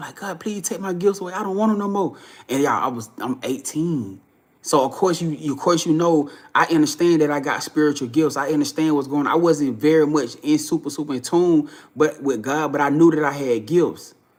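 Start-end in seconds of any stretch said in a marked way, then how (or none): 0.2-2.2 put-on pleading tone through hard, tearful crying. Retelling begging God after waking: retelling own crying plea. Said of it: "I was crying hard".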